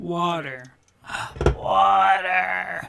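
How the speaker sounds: botched cartoon voice, creaky, rough, drawn out. Gasping for water in a failed SpongeBob voice. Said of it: "I can't do the SpongeBob voice".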